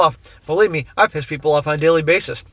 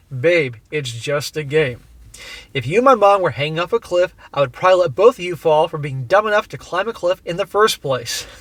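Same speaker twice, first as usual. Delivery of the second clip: usual speaking voice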